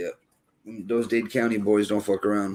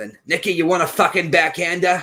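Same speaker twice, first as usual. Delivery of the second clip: put-on pitched-up older male voice; 8 semitones higher than usual. Speaker recalls arguing with his dad at baseball games, imitating his dad. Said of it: "if you ever fucking heard him".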